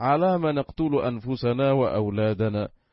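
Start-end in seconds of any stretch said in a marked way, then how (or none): none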